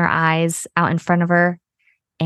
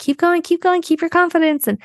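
shrill, high-pitched, encouraging yell; 11 semitones higher than usual. Recounting running after her as she rides off, retelling yelling encouragement. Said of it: "I'm just yelling after her and I'm like".

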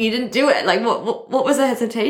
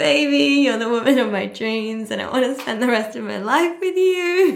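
voice welling with tears, close to crying; 3 semitones higher than usual. Woman quoting what a man told her, about to cry. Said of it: "I'm going to cry".

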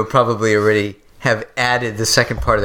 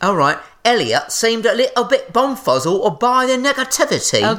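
thick put-on Cockney accent, very high-pitched; 11 semitones higher than usual. Repeating an example sentence when asked to make it more cockney, in a cockney accent. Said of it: "can you make it a little more cockney".

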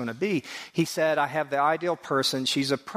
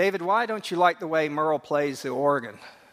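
ordinary talk

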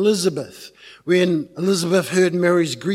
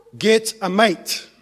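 ordinary delivery

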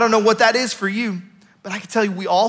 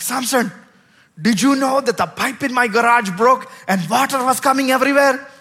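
put-on heavy Indian accent, laid on thick; 3 semitones higher than usual. Retelling what he was told at the man's house, in a thick indian accent. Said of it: "a very thick Indian accent, and sometimes I imitate him".

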